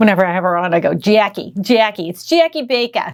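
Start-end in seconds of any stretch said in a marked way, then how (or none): 0.9-3.1 light, drawn-out put-on New Jersey accent. Host greeting a returning guest named jackie on the show, little new jersey accent. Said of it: "I got to do a little New Jersey accent".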